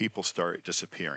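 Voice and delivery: ordinary talk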